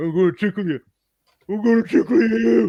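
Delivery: slow, loud puppet-style voice. Retelling a film bit where a sock puppet entertains a daughter: Stallone voice. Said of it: "just looks like Stallone".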